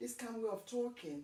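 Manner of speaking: usual speaking voice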